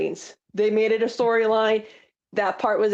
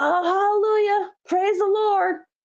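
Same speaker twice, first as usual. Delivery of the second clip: put-on very high pitch with a thick, heavy Tennessee accent; 9 semitones higher than usual. Retelling Honky's interview reaction to news about Sean, in Honky's thick Tennessee accent. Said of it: "in that really thick like Tennessee accent of his".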